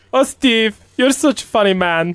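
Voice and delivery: clumsy, high-pitched, bad put-on Colombian accent. Retelling how a woman who didn't understand English reacted to a man, in a bad Colombian accent. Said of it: "Is that your best Colombian accent?".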